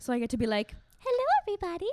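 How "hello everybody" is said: very high, floated-up head voice. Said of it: "the voice is easy 'cause it's all in, like, my head voice".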